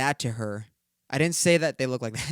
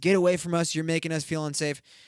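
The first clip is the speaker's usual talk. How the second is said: put-on harsh, close-range scolding yell; 3 semitones higher than usual. Retelling a woman yelling in a kid's face: imitating someone yelling in a face. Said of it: "yells in his face".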